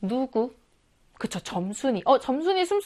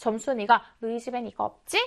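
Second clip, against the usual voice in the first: ordinary talk, nothing marked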